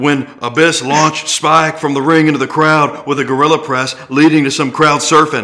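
loud, brash voice. Reading a match report aloud: Steve Austin voice. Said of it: "I have to read this in the Steve Austin voice".

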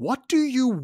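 very high exploding scream, cut off mid-word. Acting out an actor's line as he explodes: imitating an exploding scream. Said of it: "he explodes and he screams".

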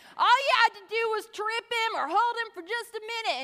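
put-on very loud, very high, scolding New York accent. Retelling a Spider-Man scene, voicing the policeman talking to Peter, New York accent. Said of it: "This is my New York accent".

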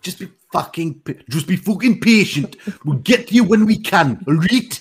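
put-on Geordie accent, loud and drawled. Imitating another speaker's words for the audience: imitating a Geordie drawl. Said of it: "in his Geordie drawl".

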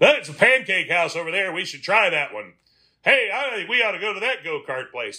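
put-on chatty voice, nonstop running commentary. Retelling a passenger commentating from the front seat: imitating someone talking at full volume. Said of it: "full volume the whole time".

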